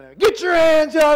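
frantic, very high, loud yelling. Retelling a training exercise where armed officers scream at him: imitating people screaming. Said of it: "everybody in the world screaming".

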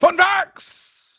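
pitched way up and called out. Announcing the fun facts section: almost a Doc Brown impression. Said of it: "It was almost a Doc Brown impression".

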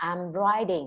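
pitch peaks on "writ-" of "writing". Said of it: "cô nói cái cụm I'm writing thì cụm chữ write có lên cao nhất".

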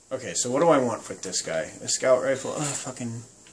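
ordinary delivery

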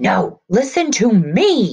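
slow, loud, high yell, me stretched long. A mayor yells into the phone, yelling. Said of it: "Mayor Maynard yelled into the phone".

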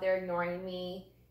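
ordinary talk

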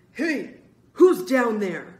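furious, very loud shout. A man's voice calls down from behind the group: angry call. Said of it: "an angry man's voice called".

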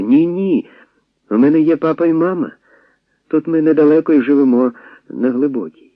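put-on frightened, high-pitched boyish voice. A barefoot boy answers a suspicious question; quick and frightened. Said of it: "Хлопець швидко, злякано".

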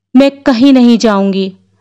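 ordinary talk

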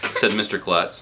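ordinary delivery

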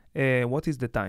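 put-on speaking with an Israeli accent. Showing how people from Israel sound: imitating an Israeli accent. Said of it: "they sound like this".

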